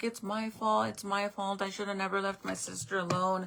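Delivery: put-on sobbing, tearful, crying voice. Retelling what a crying twelve-year-old girl said: imitating a crying girl. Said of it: "and she's crying, and she's like".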